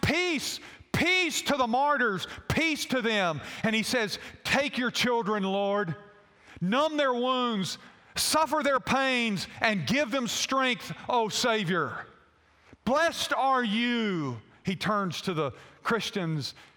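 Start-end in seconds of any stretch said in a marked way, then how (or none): 0.0-14.4 put-on loud booming voice. Retelling a film scene where Peter enters the arena: imitating Peter's loud booming voice. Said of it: "he enters with this loud, booming voice".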